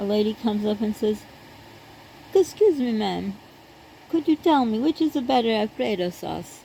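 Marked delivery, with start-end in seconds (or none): 2.3-6.6 poor, mock Italian accent. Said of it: "not a good imitation of Italian accent".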